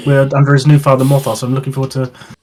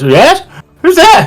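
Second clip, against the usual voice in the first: put-on very high, swooping elderly woman's voice; 9 semitones higher than usual. Describing the scene as the player walks in, the narrator voices: old woman's voice. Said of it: "you hear a familiar, like, old woman's voice".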